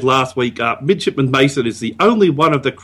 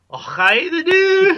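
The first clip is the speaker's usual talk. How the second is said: very high-pitched put-on Scottish accent. Answering a request for a goodbye line: Scottish Navajo lieutenant voice. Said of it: "something a Scottish Navajo lieutenant would say".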